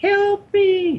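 extremely high-pitched put-on voice. Acting out how she practised a phrase from an old movie, in her highest high-pitched voice. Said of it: "in her highest high-pitched voice".

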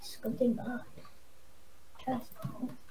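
soft, unvoiced whisper.

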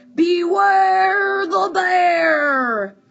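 great growly booming voice. Narrator reads a bear arriving at night among penguins, in a great growly booming voice. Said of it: "a great growly voice boomed out".

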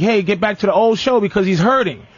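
ordinary talk

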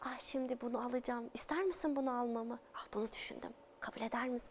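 very quiet, hushed, confiding undertone. Demonstrating a line as if telling a secret outside the role: lowered, hushed voice. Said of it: "daha kısık bir sesle".

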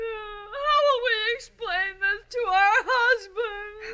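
crying, tearful. Asking how to explain the car crash to husbands: crying. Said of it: "crying isn't going to".

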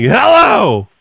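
loud, high-pitched shouted yelling. Retelling how the other speaker answered the phone: imitating someone yelling. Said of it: "Yelling and hanging up".

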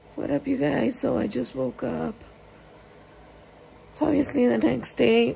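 strained voice, speaking with difficulty. A vlogger who just woke up the day after surgery, voice barely working. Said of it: "Excuse my voice, I can't really talk".

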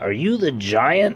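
uncertain, doubting, doubtful tone. Reading a story aloud, a character questions the man who answered the door; doubtful. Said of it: "asked Toc doubtfully".

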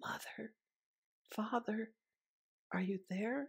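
soft, hushed, barely voiced whisper. Boris, stuck, calls to his mother and father, whispering. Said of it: "he whispered".

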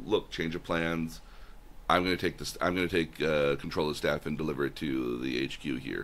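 ordinary delivery

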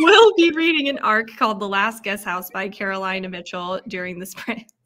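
loud speech broken up by laughter.

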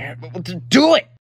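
loud, slow, fed-up yell. Telling a friend to sniff and track the others: yelling. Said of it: "you don't have to yell at me".

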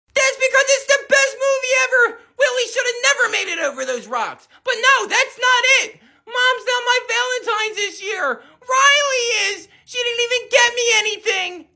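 distressed. Asked why he is so upset, the middle child answers: upset. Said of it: "Why are you so upset?".

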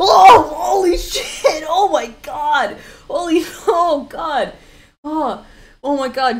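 very slow, drawn-out, high, loud frightened shriek. Clicking a gif on stream and getting jump scared: scared shriek. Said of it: "that scared me so bad".

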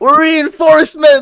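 put-on scream, very high and loud.

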